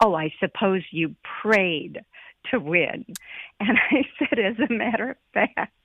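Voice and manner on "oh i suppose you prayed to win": mock-sarcastic, mimicked sarcastic tone. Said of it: "very sarcastically said".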